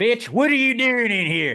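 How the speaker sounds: fake Southern accent, extra R sounds, loud, high. Joking about yelling at a dog: put-on southern accent. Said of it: "throw random R's in it to make it sound Southern".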